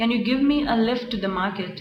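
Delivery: ordinary delivery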